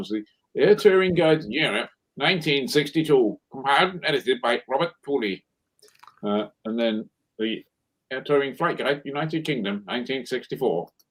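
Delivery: newsreader-style news announcer delivery. Reading out old flight guide titles to a guest, BBC news announcer voice. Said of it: "That's my best B B C news announcer voice".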